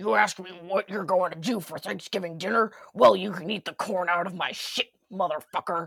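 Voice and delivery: gritty, put-on villain voice. Trying the voice again after another speaker's critique, gritty Nightmare on Elm Street voice. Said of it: "gritty voice whatevers".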